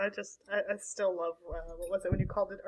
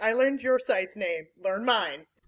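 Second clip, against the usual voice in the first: mock-cranky put-on voice; 5 dB louder than usual. Retelling how Mac answers shows that call his site the wrong name, imitating cranky Mac. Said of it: "you can just hear in his voice how cranky he is".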